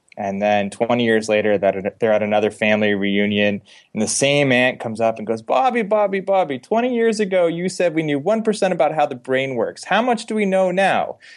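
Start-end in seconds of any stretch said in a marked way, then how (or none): 5.4-11.1 high-pitched, put-on New Jersey accent. Act out the aunt coming up to bobby at another family reunion, in a put-on new jersey accent. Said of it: "I'm framing a New Jersey accent".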